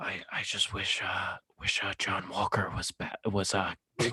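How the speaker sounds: deep, low, hushed whisper. Introducing Batman as a guest, then voicing him in a deep Batman whisper. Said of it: "why are you whispering?".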